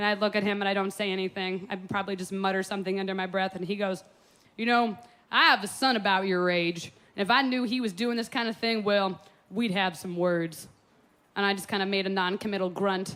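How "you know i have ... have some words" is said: plain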